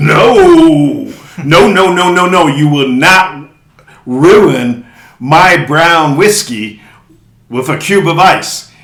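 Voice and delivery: harsh angry voice, slow and loud. Retelling what a man said when asked for ice in whiskey, mock-angry. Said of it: "acted as is as mean and angry as Shrek".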